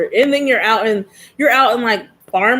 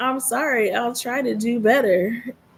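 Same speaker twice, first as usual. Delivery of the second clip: slow, smart-speaker voice-assistant voice; 2 semitones higher, 5 dB quieter than usual. Retelling what Alexa answered after a complaint: imitating Alexa. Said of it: "Alexa goes".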